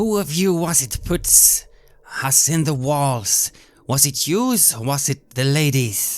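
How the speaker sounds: raging, furious, angry yelling. In a role-play scene, a character confronts the shadows with angry shouting. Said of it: "I'm shouting at the shadows".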